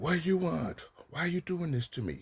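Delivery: very high-pitched, loud yelling. Advising listeners how not to respond when yelled at, yelling back. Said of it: "yell at them by saying".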